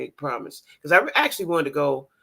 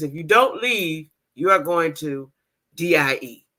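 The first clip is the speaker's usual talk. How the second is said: slow, put-on blunt delivery, no softening; 3 dB louder than usual. Quoting a woman mayor's warning to leave: imitating a blunt delivery. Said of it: "She said it just like this. ... very bluntly".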